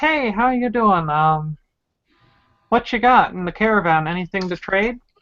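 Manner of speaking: friendly, cheerful, bright, upbeat delivery. A player greets halflings with a caravan, in a cheerful greeting. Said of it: "I'll greet them in a cheerful voice".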